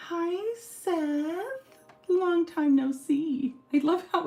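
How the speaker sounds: very high, slow, squeaky, excited gush. Greeting Seth as he comes on, in a high, squeaky, excited voice. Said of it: "I get my high, squeaky, excited voice".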